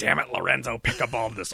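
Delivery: rough, scratchy, creaky voice, scraped out. Showing a childhood Nick Nolte voice: Nick Nolte voice. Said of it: "doing Nick Nolte voices".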